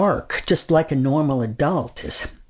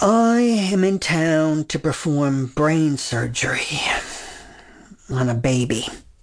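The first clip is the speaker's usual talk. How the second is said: mock, slow, utterly weary voice. Retelling answering a counter clerk who asks business or pleasure, mock-weary voice. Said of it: "Now I say in the weariest voice possible".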